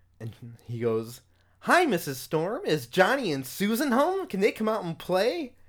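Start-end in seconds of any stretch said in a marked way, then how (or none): 1.6-5.5 cheesy, hammed-up delivery, very high and loud. Retelling a cheesy moment when the door opens: imitating Ben's cheesy line. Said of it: "this really cheesy moment".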